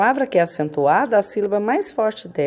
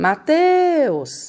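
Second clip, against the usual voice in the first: called out, stress on teus, held long; 9 semitones higher than usual. Calling someone named Mateus to find the strong syllable: teus drawn out. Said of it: "é o teus, porque é a sílaba que a gente demora mais quando a gente chama".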